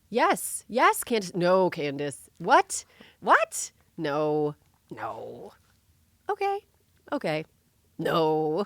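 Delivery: very slow, loud, swooping, dragged-out reactions. Acting out own reactions while listening to a podcast: impression of self listening. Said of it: "my impression of me listening to Candace Owens".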